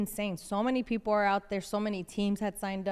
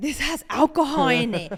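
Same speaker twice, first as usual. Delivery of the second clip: imitated shocked reaction, pitched higher and said louder; 5 semitones higher, 9 dB louder than usual. Retelling the dad's reaction on tasting the drink: imitating a shocked dad. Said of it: "they were so shocked".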